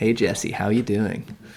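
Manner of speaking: put-on American accent. Joking about a put-on accent on a podcast: put-on American accent. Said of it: "my American accent".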